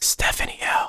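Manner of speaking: soft whispering. Reading out donor names in turn, asmr whisper. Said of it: "A S M R".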